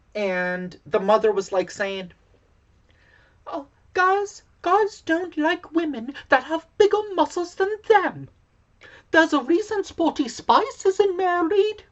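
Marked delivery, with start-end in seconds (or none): 3.4-11.7 very high, put-on British accent. Retelling what a mother told girls at soccer practice, in a British accent. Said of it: "You try to do a British accent".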